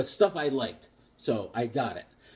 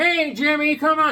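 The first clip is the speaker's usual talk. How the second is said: drawn-out, slow, very high voice; 12 semitones higher, 4 dB louder than usual. Retelling being invited into a back room of comics: impression of Harvey. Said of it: "This is my impression of Harvey".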